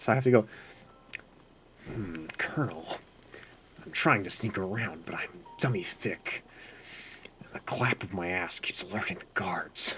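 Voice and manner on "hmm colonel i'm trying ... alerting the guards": breathy, whispered stealth-soldier voice, radio-like. Retelling being asked on a call to do the voice: Solid Snake impression. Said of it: "I just sounded like Solid Snake".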